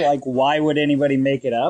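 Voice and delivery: ordinary delivery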